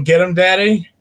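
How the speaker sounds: raucous, loud screaming yell. Describing barging into screenings of the movie in a gimp suit, retelling a scream.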